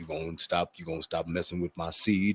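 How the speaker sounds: smooth, easygoing, low, soft mellow voice. Retelling how he knew he was in trouble, imitating the man's mellow voice. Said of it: "talking to me in that mellow moods voice".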